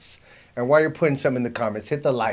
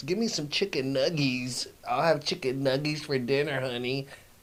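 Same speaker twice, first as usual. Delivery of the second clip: mock childish baby talk, quieter; 3 semitones higher, 4 dB quieter than usual. Mocking grown men who ask for food like kids: imitating a man talking like a child. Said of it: "talking like a child".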